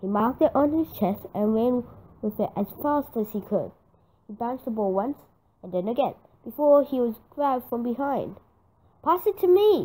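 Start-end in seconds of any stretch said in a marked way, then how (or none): 9.0-9.9 high-pitched loud yelling. Teammates call for the ball as Joe is grabbed from behind, yelled. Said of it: "yelled his teammates Ben and Lizzie".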